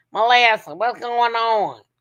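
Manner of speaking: slow, put-on rural country drawl. Imitating how a dad talks when he comes in, imitating a country accent. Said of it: "That's how he talk old country ass".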